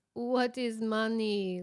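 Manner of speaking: hilarious, comic put-on Jamaican accent. Quoting a man's answer from a famous interview clip, hilarious jamaican accent. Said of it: "hilarious Jamaican accent".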